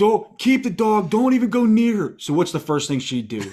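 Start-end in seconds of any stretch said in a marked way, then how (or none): 0.0-2.1 mock yelling, higher and louder. Retelling a bathroom panic, ordering the wife to stay out: retelling own yelling. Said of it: "I'm yelling".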